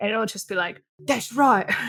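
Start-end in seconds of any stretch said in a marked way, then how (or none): 1.0-1.7 British speaker attempting American accent, higher and louder. Retelling a comedy bit where Jason Statham plays an Angelino: Jason Statham faking American accent. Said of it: "it's Jason Statham, Angelino".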